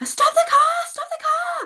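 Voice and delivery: acted panicked screaming. A woman retells yelling at her dad while he drove, retelling a panicked scream. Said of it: "I just panicked and screamed".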